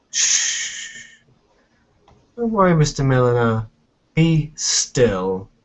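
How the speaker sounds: very sarcastic, dripping with heavy sarcasm. A tabletop game player speaks in character to Mister Milliner, very sarcastic tone. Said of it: "say in a very sarcastic tone".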